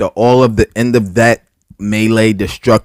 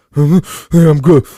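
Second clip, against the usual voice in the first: high, loud sobbing breakdown.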